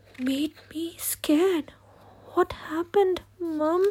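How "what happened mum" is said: very feeble, strengthless, weak, high voice. Reading a story, a sick child asks mum what happened: very weak voice. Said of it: "I asked in a very weak voice".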